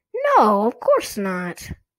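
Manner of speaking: firmly insisting, emphatic. Mocked by her sister, a girl answers back, insistent. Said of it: "Chris insisted".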